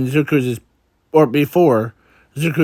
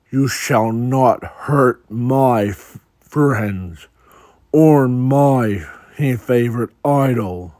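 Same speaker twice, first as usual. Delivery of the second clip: deep, dark voice, "my" drawn out. Narrator reads Zuko's line as his quirk takes over, in a deep, dark voice. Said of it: "deep, dark voice of Zuko says".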